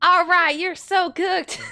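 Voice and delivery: very high-pitched, shrill put-on Southern accent. Imagining a Thor look-alike southern Viking talking, in a put-on southern accent. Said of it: "you just see some Thor look-alike and you hear".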